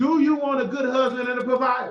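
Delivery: serious, stern, firm, no-nonsense tone. Asking a professor a direct question so listeners in back hear: stern and loud. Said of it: "I'm being stern".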